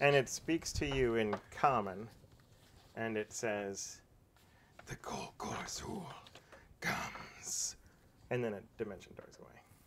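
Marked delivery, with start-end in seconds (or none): 4.9-7.7 breathy, whispered fiendish voice. Voicing a transformed creature that speaks to the players in Common; fiendish voice. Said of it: "Fiendish voice".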